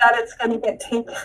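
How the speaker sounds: put-on tearful child voice. Retelling a daughter's worried words at night: imitating a tearful child. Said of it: "full of tears".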